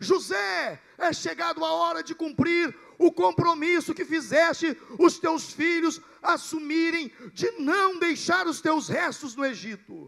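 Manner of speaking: loud, shouted preaching-style delivery.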